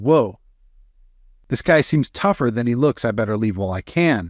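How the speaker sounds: ordinary delivery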